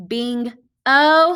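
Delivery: bingo broken into bing and o with pause.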